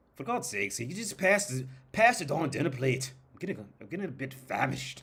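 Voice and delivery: high, fake British newscaster accent. Retelling talking to a spouse over dinner: put-on British newscaster accent. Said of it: "I would just talk like it".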